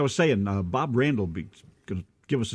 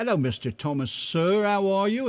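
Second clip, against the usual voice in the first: words coming out somewhat British-sounding; 9 semitones higher than usual. Co-host greeting listeners in the chat room by name, sounding british. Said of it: "you sounded British then when you said that".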